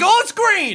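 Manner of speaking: literal shout, high and loud.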